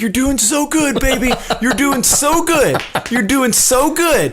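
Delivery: put-on very high, drunken, encouraging cheering. Retelling how a drunk couple cheered each other on: imitating drunken cheering-on. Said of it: "cheering each other on while they".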